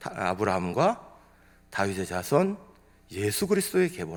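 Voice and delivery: halting phrase-by-phrase delivery in short chunks. Explaining how to break up a Bible verse, reading with pauses between phrases. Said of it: "끊기 하면".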